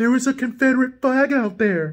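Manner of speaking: high-pitched, mocking impression voice. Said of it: "do Justin voice".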